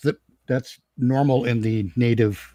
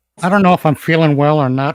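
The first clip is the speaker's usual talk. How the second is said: loud cartoon-style character voice; 3 semitones higher, 6 dB louder than usual. Answering how they are doing, Peter Griffin voice. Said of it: "stuck in this Peter Griffin voice".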